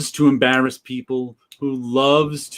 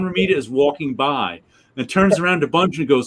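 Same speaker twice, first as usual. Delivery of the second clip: ordinary talk, nothing marked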